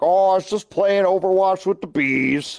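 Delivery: put-on high-pitched grandpa voice. Speaker imagines answering the grandkids' question years from now: grandpa voice. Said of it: "that's my grandpa voice".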